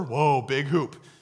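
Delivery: put-on small child voice, like a two-year-old, exclaiming. Retelling what the two-year-old says at the hoop: imitating Evie. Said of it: "waddles over".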